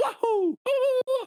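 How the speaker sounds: very high-pitched, squeaky put-on cartoon voice. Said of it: "killer Mario impression".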